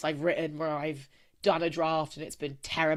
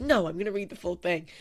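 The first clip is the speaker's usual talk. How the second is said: irritated, annoyed, insistent, standing-firm retort; 2 semitones higher than usual. Retelling the mother-in-law's reaction to a redacted version, imitating an annoyed reply. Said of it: "And she got so annoyed".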